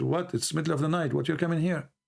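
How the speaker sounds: plain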